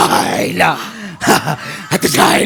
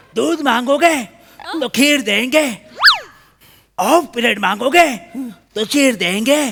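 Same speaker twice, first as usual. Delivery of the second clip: put-on angry action hero voice, higher; 9 semitones higher than usual. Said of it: "सनी Deol?".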